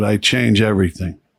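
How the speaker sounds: put-on weak, feeble voice. Recalling a dying man's last words, the speaker is imitating a weak voice. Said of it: "his voice was real weak".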